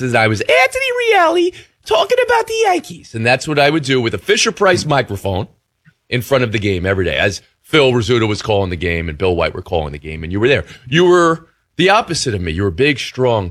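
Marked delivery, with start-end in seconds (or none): 0.0-3.1 put-on very high, squeaky kid voice. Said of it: "I had a squeaky voice".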